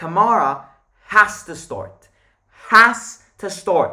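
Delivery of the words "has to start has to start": has punched loud and slow, emphatic. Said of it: "Emphasis on that has".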